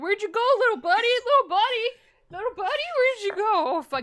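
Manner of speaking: freaking out, frantic, very high-pitched and loud. Telling a made-up story, the speaker plays a guy who lost a ferret, mock freaking out. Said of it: "freaking out".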